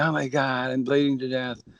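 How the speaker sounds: play-acted, very high, frantic, panicked screaming. Retelling a restaurant diner who cut himself, imitating a bleeding man screaming. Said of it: "and he's screaming".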